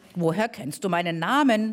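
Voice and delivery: ordinary talk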